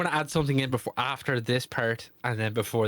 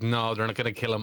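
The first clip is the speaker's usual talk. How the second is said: plain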